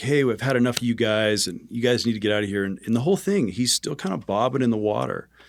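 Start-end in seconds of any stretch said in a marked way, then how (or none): 0.0-2.6 mock half-shouted mild yell in a man's voice. Retelling how the supervisor yelled at the group: imitating a man yelling. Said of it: "he starts yelling".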